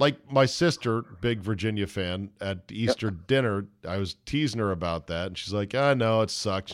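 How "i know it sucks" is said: mock-sad, put-on sad tone. Retelling the sister's reply when teased at Easter dinner, mock-sad. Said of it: "she was like, kind of sad".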